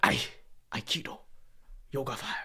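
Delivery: breathy, whispered martial-arts master voice, breathed out. Imagining a reply to the kid with the crazy face: Mister Miyagi voice. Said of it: "if Mister Miyagi voice went on".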